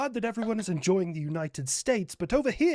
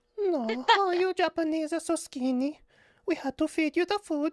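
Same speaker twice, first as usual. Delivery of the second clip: very high put-on Mexican accent drifting into Italian; 10 semitones higher than usual. Voicing Mexico speaking to Japan: put-on Mexican accent slipping Italian. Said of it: "H L C sounding a little Italian with the Mexico there".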